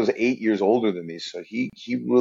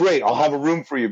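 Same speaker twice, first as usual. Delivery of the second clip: put-on excited voice, higher pitched; 4 semitones higher than usual. Retelling his brother's reply about a Vegas stand-up night, imitating excited brother. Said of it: "he got all excited".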